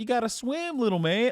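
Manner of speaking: very high-pitched, careless, negligent father voice. Imitating a negligent dad whose kid is drowning: imitating a negligent dad. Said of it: "is negligent to the point of".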